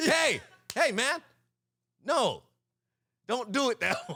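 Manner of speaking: very high, shrill, drawn-out yell. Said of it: "but with your voice".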